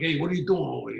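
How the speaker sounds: put-on loud, fast Brooklyn accent, New York street style. Show a listener how brooklyn speech differs from the bronx, in a brooklyn accent. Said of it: "Brooklyn is more like".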